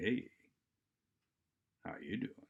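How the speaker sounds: voice dropped way down, very low and soft. Demonstrating how bringing the voice way down low changes meaning: voice way down low. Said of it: "bringing our voice way down low".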